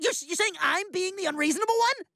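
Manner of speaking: high-pitched, worked-up protesting tone. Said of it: "Jeez, calm down".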